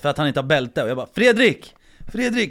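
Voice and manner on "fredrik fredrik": acted-out, very high, very loud screamed call. Retelling screaming at a man without a seatbelt in the car, acting out a scream. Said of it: "jag bara skriker på honom".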